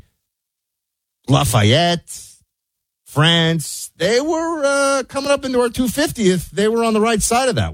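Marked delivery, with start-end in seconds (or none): 1.3-7.7 high, pompous, pedantic know-it-all historian voice. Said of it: "the historians in the audience, would say".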